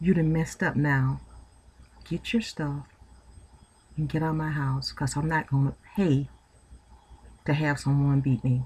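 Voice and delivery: speaking very softly. Retelling what the speaker told the man who hit them, retelling speaking real quiet. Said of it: "I was real quiet".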